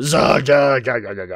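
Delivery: gruff, grunting orc voice. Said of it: "you kinda think of that at World of Warcraft".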